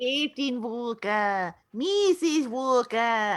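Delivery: put-on practiced Australian accent. Showing how they always practice their australian accent, in an australian accent. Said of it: "I always practice my Australian accent by going".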